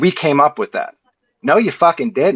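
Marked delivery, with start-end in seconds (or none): 1.4-2.4 defensive, aggressive, much higher pitch. Rebutting a claim they disagree with, the speaker gets defensive and aggressive. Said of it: "I'm getting a little defensive and aggressive".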